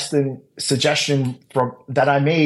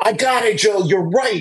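acted, high, raised full-voice yell; 7 semitones higher than usual. Recounting someone coming out and calling down to him, retelling a yell. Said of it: "Sean comes out and yells".

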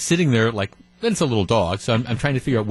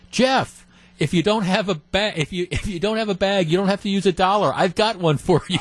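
put-on, high-pitched, shouted yell; 9 semitones higher than usual. Retelling how a guy walking his dog called out this morning, retelling his yell. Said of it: "and he yells".

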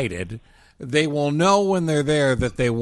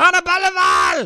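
very high, loud, all-out yell; 5 dB louder than usual. Joking the host's name must be shouted, shouting the name Anna Belval. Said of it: "Her name can only be pronounced by shouting".

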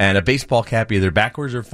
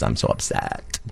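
whispery, breathy, hushed reality-show bachelorette voice; 13 semitones lower, 7 dB quieter than usual. Describing a woman's friends, imitating bachelorette talk. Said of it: "talking like the bachelorettes do, like when they go like this".

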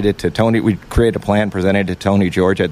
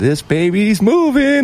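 put-on trembling, very high, nervous voice; 13 semitones higher than usual. Retelling how a nervous actor sounded in the video of his ride, imitating Mark Wahlberg's shaking voice. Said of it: "his voice is shaking".

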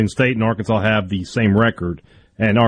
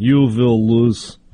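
put-on Russian accent. On a sports show, a host repeats a prediction: Ivan Drago impression. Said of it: "That was more Ivan Drago".

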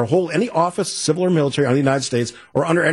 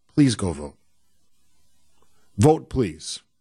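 said very nicely, with much lower pitch; 6 semitones lower than usual. After people said to stop shouting, urging everyone to go vote, said as nicely as possible. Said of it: "It's as nicely as I can say it".

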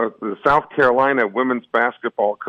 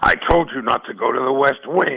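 put-on beastly monster voice. Greeting the guest on the show, then doing a Beast impression. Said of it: "I tried to do my best beast impression there".

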